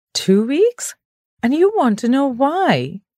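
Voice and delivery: voice full of disbelief. A narrator reads a character who shook the sleepy narrator awake, disbelieving. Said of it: "the disbelief in his voice unmistakable".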